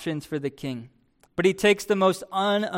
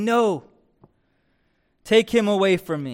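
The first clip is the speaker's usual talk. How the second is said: commanding, slow, drawn-out royal king voice. Preaching on a passage, imagining how the king would reply, in a loud booming voice. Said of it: "the king in a loud, booming voice to say".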